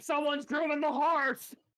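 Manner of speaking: shrill, loud, very high alarmed scream. Describing a character waking someone up by screaming: screaming.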